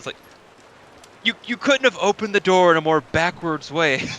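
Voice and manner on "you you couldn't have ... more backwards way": confused, befuddled man's character voice, higher. Voicing a baffled man who asks about his door: befuddled man's voice. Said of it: "sits there in absolute befuddle".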